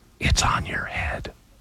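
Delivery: muttered under breath. Retelling what the girl reading lines with the speaker said, under her breath. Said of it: "she very under her breath and very barely points".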